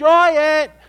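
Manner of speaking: loud, high shout. Recounting refusing to climb up to join her, retelling yelling up to her. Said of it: "And I'm yelling".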